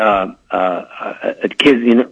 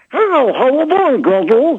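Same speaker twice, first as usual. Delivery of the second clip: small, high put-on character voice. Retelling greeting a boy in the little voice he does. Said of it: "That little voice you do".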